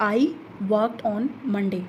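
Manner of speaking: falling tone, pitch dropping low on Monday. Demonstrating how some statements are spoken in English, falling intonation, low by Monday. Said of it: "तो हमारी जो टोन है वो फाल हो रही है, मंडे तक आते आते हमारी जो टोन है वो लो हो रही है।".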